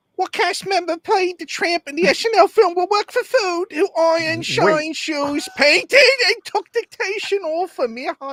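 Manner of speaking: very high put-on Victorian street urchin voice. Asked to do it in a Dickensian fashion, read the quiz question in a Dickensian street urchin voice. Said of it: "Give us a Dickensian street urchin".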